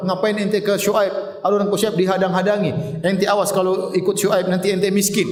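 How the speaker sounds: ordinary delivery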